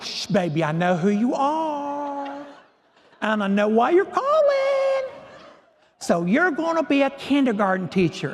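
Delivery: put-on high, swooping, drawn-out genteel Southern accent. Retelling a phone call as the mentor answers: Margaret Saunders's Southern genteel voice. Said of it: "this lovely Southern genteel voice".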